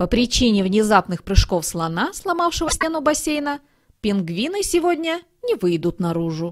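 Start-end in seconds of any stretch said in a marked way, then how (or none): none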